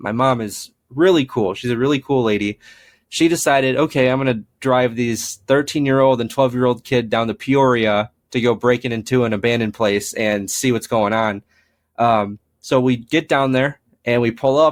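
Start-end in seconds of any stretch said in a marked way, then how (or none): none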